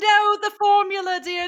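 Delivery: put-on older woman voice, English accent. A speaker recalls the voice in their head that helped them pass geometry: older english woman accent. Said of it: "She had an English accent and she was an older woman".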